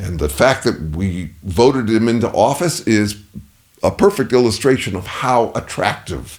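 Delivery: ordinary delivery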